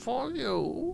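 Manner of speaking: badly done, very quiet, murmured villain voice. Joking about the Batman character, in a bad Bane voice. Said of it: "That was the worst Bane voice".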